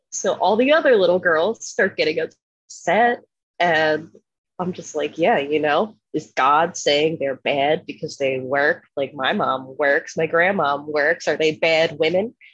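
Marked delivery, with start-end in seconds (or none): none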